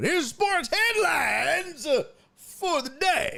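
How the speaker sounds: very high, slow, drawn-out Southern drawl. Speaker introducing the day's sports headlines, in a Boss Hog voice. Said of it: "I don't know why I sound like Boss Hog right there".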